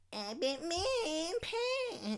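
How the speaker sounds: very high, drawn-out, sing-song cartoon voice. Retelling the first voice done as a kid: Eric Cartman voice. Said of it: "my first voice, I would say".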